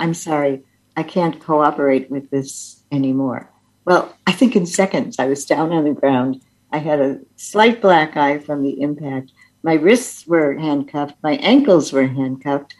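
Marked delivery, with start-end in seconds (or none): 0.0-3.5 hushed, gentle, quiet, soft-spoken delivery. Retelling own words while refusing a search: retelling quiet speech. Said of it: "quietly saying".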